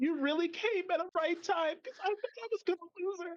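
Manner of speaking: very high, blubbering, bawling, tearful speech. Voicing a character who bawls after being helped: acting out bawling. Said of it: "She starts, like, bawling her eyes out".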